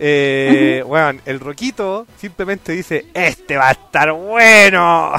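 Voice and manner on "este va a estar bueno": put-on drunk fat guy voice, much louder. Reading out what someone says, in a put-on drunk fat guy voice. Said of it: "Eso se lo escucho con voz de guatón ebrio sin camisa".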